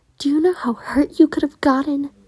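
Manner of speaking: cross and anxious. Friends gather around him after he did something dangerous: angry but worried. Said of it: "Finny says in a very angry but worried tone".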